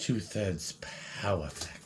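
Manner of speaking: very hushed, fake put-on voice, whispered. Without knowing why you are doing it, repeat yourself in a faux Jonas voice. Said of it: "doing that in like a faux Jonas voice".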